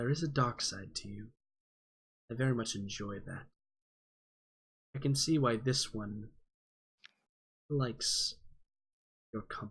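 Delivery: sultry, alluring, almost seductive delivery. In a game, a character smiles at another character and speaks in an almost seductive tone. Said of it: "she says it in like a very like almost seductive tone".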